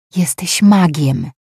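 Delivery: confiding, secretive, kept between two. One servant speaks to another so the rest of the staff won't hear, hushed voice. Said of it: "powiedziała ściszonym głosem Eni".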